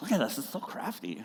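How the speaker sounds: very hushed, soft put-on crafty voice. Talking about spouses praising each other's crafts, in a Pinterest voice. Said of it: "That's my Pinterest voice".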